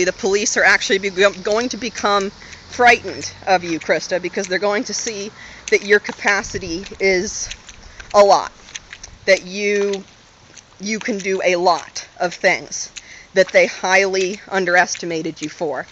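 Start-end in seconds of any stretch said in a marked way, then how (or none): none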